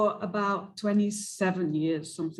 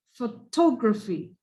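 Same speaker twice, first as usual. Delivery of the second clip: photography with stress on second syllable "tog"; 4 dB louder than usual. Modeling word stress for a class, stress on 'tog' in photography. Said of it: "So it's on the T".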